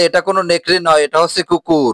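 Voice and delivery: ordinary talk, nothing marked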